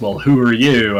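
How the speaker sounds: put-on old west gunslinger voice. Retelling a father's put-on voice while filming a child: imitating dad's put-on Doc Holliday voice. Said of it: "puts on a voice and says".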